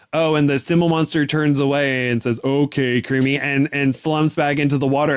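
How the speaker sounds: plain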